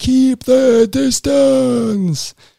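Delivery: very high-pitched, rasping, rough yell. Recalling a guy at luggage pickup yelling at the speaker's group: retelling a guy yelling. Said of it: "just yelling at us like".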